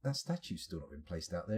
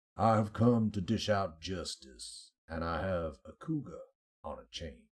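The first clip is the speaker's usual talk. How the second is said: slow put-on American accent; 5 semitones lower than usual. Making a joking line while playing a game: put-on american accent. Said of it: "being forced to sit through that little accent there".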